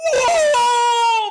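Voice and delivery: very high, very loud, drawn-out crying wail. Joking about the old fable, boy who cried wolf shouting. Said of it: "That's just how I imagine him sounding".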